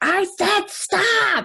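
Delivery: acted-out high, stern, angry yell. Recounting telling someone to stop for the sixth time: retelling a yell. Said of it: "I have to get to that sixth time and yell".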